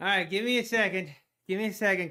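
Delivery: short of breath, winded words. Host back on the duck race stream after running upstairs, out of breath. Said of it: "Catch my breath here. I should not have ran upstairs".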